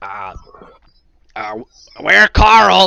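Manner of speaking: croaky newt creature voice. Voicing a newt person who grabs the pole: croaking newt person voice.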